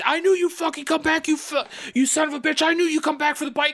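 put-on very high, shrill, full-throated furious scream. Retelling a man in a ghillie suit springing a trap: imitating someone screaming at top of lungs. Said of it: "screaming at the top of his lungs".

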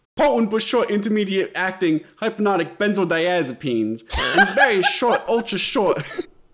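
put-on Brooklyn accent, loud and high-pitched. Asked by another speaker to say a big word, in a Brooklyn accent. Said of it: "can you say at least one big word in a Brooklyn accent?".

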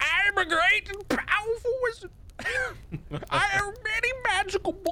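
put-on very high, slow old kobold wizard voice. Trying out a voice for a really old kobold wizard character: old wizard voice. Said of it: "where I give him this voice and be like".

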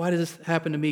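ordinary talk

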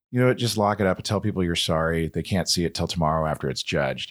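ordinary delivery

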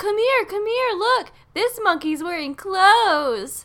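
mock, very high, showy calling-out voice. Retelling a man calling his family over: imitating an attention-seeking call. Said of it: "in a very, like, wanting me to notice way".

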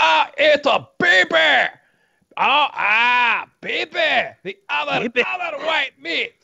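very high-pitched, slow, rough, creaky drawl. Quoting a favourite movie character about a baby: Fat Bastard impression. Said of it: "the whole Fat Bastard thing. He's like".

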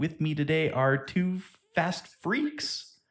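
slight squeak in voice, rising pitch. Podcast host introducing his co-hosts: slight squeak in voice. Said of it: "a little squeak to my voice".

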